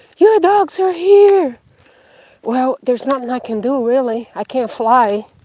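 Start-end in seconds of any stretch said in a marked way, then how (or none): 0.2-1.6 very high, loud, distant-sounding scream. Retelling how a man in a truck down the hill shouted, imitating a screaming man. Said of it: "screaming like".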